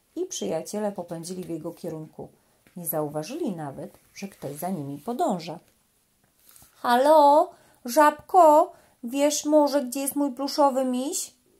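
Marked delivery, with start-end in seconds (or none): 6.7-11.3 loud, high, blaring little elephant trumpet. Narrator reading a little elephant calling out to a frog, trumpeting loudly. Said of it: "Trąbił głośno słonik Stefek".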